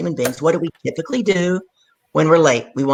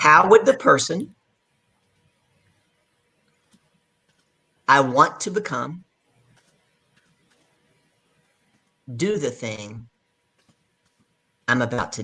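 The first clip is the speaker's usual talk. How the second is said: slow, unhurried, deliberate, careful dictation phrasing. Speaker repeats a question so the audience can put it in the chat, said slowly. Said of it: "we're going to say that slow".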